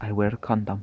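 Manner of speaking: put-on Polish accent, best effort. Retelling a come-on made to some girls, in an attempted Polish accent. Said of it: "my best attempt at a um, Polish accent".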